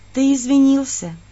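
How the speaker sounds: words let out on a sigh. Narrating a story, the narrator answers his apology: quiet sigh. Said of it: "Так же тихо вздохнула я".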